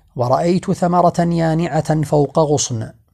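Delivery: ordinary talk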